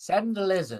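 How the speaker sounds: put-on small elderly voice. Narrating a scene, the speaker voices an unseen tent occupant in an old, small voice. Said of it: "very what sounds old and small voice".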